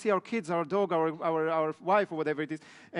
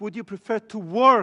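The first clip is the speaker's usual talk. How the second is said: heavy emphasis on the word "work"; 3 semitones higher, 7 dB louder than usual. Repeating a question about working with people or alone: emphasis on the word work. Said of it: "the emphasis on the word to work".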